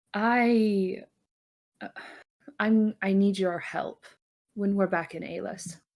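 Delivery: hesitant, halting, stop-start pleading, drawn-out "I". Leon asks her child for help once they are back: lowered voice. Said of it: "lowers her voice and says".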